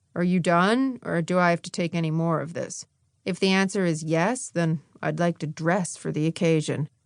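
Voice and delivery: flat, level monotone with no interest at all. Narrator voicing a man's line in a story, flat voice. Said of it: "he continued in a flat voice".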